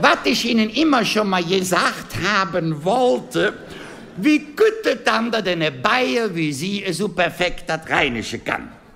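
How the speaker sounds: friendly, high-pitched, put-on older gentleman voice.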